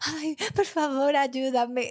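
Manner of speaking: whiny, whimpering, pleading crybaby voice. Speaker retells her partner calling from the hospital, imitating a whiny, crying voice. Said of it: "Era con voz de chillón".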